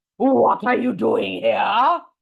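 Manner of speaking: rough, rasping, very gruff giant voice. Reading a story, he returns to find children playing in his garden: very gruff cry. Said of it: "He cried in a very gruff voice".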